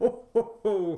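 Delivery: high, loud, belted ho ho ho. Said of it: "he does the old classic".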